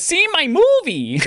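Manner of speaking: very high, squeaky cartoon Italian voice. Reading gaming news, the speaker quotes Mario in a Mario voice. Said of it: "that's my Mario voice".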